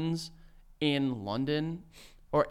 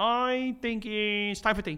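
put-on puppet voice, much higher; 6 semitones higher than usual. Imagining what the king would say: Kermit the Frog voice. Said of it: "Do you think that the king is Kermit the Frog? Why are you doing that voice?".

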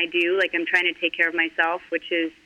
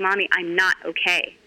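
slow words, crying through every one. A mother repeats what her sobbing child said to her: imitating a child sobbing. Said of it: "she was sobbing and she's like".

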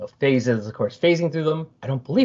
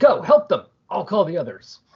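called out with swinging pitch; 5 semitones higher than usual. Recounting a story where one character orders others to help; retelling a yell. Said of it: "And Doc yells".

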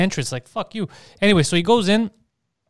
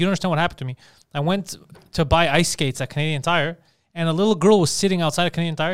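ordinary talk, nothing marked

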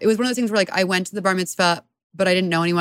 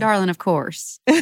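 put-on Texas accent. Asked whether they can do a Texas accent, the speaker answers in a Texas accent. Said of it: "Can you do a Texas accent?".

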